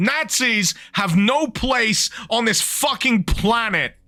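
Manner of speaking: carried-away, furious, angry ranting. Ranting before apologizing for getting carried away: carried away angry rant. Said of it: "Sorry, I'm getting carried away".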